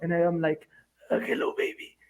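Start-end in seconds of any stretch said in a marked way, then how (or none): 1.1-1.9 hoarse, breathy whisper with voice all but gone. Retelling waking up the next day: imitating own lost voice. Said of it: "I woke up with no voice".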